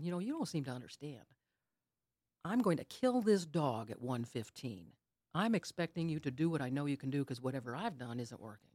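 mock furious, insistent, demanding shouting. Retelling yelling at God on the way to the vet: imitating own past yelling. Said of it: "And I'm yelling at God".

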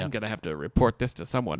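plain

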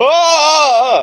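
high, frightened screaming shriek. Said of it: "The other two mummies are like".

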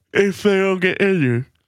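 mocking fast high singsong.

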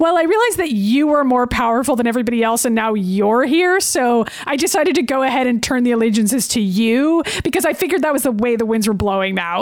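ordinary delivery

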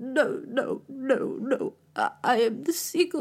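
put-on mid-Atlantic accent. Retelling a friend's impression of the breakdown scene: Natalie Portman mid-Atlantic accent. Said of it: "mid-Atlantic accent, like this mid-Atlantic dialect".

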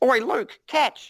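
mock very high-pitched sudden shout. Retelling a workshop story of a sword being thrown: imitating Richard calling out. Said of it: "you'd hear this".

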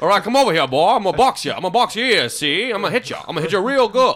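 loud, high, blustery, puffed-up rooster voice. Acting out a cockfight against Foghorn Leghorn, do the rooster in a Foghorn Leghorn voice. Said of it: "A cockfight with Foghorn Leghorn".

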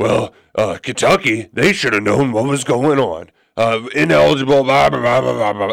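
self-righteous, preachy, dismissive tone. Retelling what Rick Stansbury said about ineligibility: Rick Stansbury impression. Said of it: "That did not sound like Rick Stansbury".

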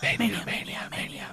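quiet echoing whisper.

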